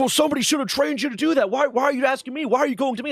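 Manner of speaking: high-pitched, shouted yelling rant. Retelling a superior's reply to a request for help: imitating someone yelling. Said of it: "he just starts yelling at me".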